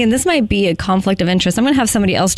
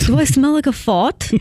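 put-on English accent, higher pitch; 5 semitones higher than usual. Trying an English accent by channeling Evan's usual sayings: English Evan impression. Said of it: "Not bad".

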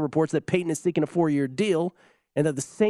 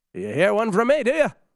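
terrible, high-pitched put-on Irish accent; 5 semitones higher, 3 dB louder than usual. Act out a man's reply after being told that he has an accent, in a terrible Irish accent. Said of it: "That's my Irish accent".

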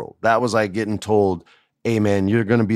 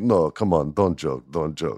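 put-on tough Eastern European wrestler voice, lower, quieter; 5 semitones lower, 4 dB quieter than usual. Retelling a joke with a tough Eastern European wrestler: imitating Kozlov. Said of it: "And he'd be like".

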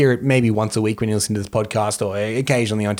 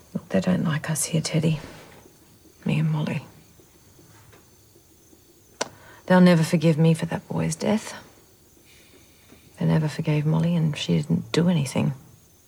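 put-on Australian accent, higher and quieter; 5 semitones higher, 5 dB quieter than usual. Speaking as a film character to Teddy: Australian accent. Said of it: "she's doing, uh, an Australian accent".

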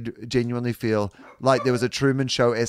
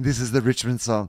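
put-on whisper. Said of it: "literal whisper from the West".

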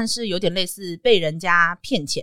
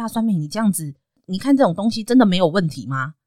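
mock anxious, very worried motherly tone. Retelling how her mother questioned her, imitating mom's worried tone. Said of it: "我妈就会用一种非常担心的语气".

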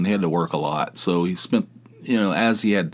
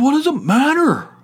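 put-on shrill, high, loud, pissed-off, defensive voice; 6 dB louder than usual. Retelling his answer when asked about his groceries, mock-defensive and pissed off. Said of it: "He's getting all defensive".

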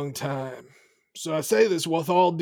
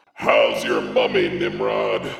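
thundering, booming, very low spellcaster voice; 3 dB louder than usual. She has reappeared behind him and addresses nimrod in a booming thaumaturgy voice. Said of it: "I just do a booming thaumaturgy voice".

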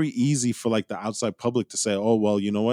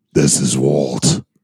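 booming, very deep hero voice; 9 semitones lower, 9 dB louder than usual. Signing off the podcast, the host introduces himself in his best Batman voice. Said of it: "Let me try and do it in my best Batman voice".

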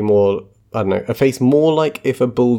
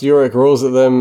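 plain

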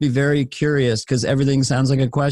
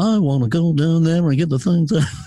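lower, settled, measured rhythm; 2 semitones higher than usual. Continuing the serial killer bit: Jerry Seinfeld impression with lower rhythm. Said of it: "that lower rhythm he does".

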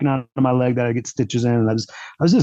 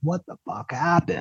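mock scream, mild and only hinted at; 2 semitones higher, 7 dB quieter than usual. Retelling lying at the roadside after a crash: imitating his own screaming. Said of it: "screaming, like".

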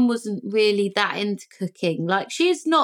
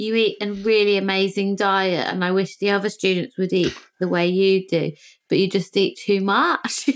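ordinary talk

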